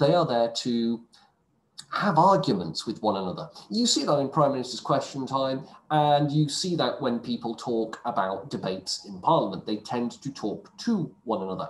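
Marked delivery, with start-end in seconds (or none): 9.7-11.7 TO leaned on with a falling tune. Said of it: "at one another".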